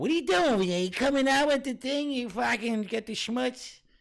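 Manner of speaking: shrill, high, loud mother voice. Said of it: "Like your mother".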